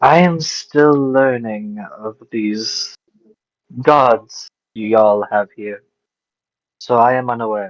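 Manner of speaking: slightly displeased, with some distaste. Asked about the gods, a fae character answers with some distaste. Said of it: "he spoke with some distaste in his mouth".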